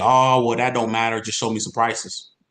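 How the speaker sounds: mock sarcastic customer voice. Showing how a prospect might brush off questions: imitating a sarcastic prospect. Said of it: "tries to get sarcastic with you".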